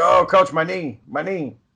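slow, drawn-out cry of intense pain. Retelling a teammate on the ground hurt: imitating someone in intense pain. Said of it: "in intense pain".

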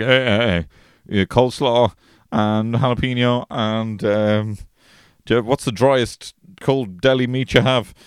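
slow, fumbling, flustered delivery. Retelling ordering at a deli counter: imitating fumbling an order. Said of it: "I fumble like".

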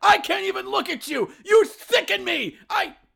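high, shrill, creaky yelling. Welcoming visitors in for coffee, then yelling at them: Montgomery Burns voice, yelling. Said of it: "I'm sorry. I'm yelling".

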